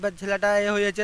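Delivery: plain reading voice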